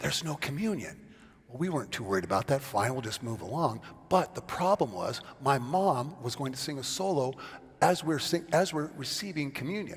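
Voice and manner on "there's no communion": hushed, urgent stage half-whisper. Retelling being half-whispered to during a church service, retold half-whisper. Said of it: "he whispers to Julie and me".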